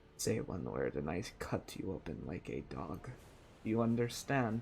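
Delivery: low, quiet, dropped, threatening menacing whisper. A fiery tiger-striped figure holds a blade to your throat, whispering. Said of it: "and he whispers".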